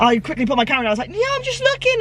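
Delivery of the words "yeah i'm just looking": shouted, high pitched. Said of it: "I shouted back over to her".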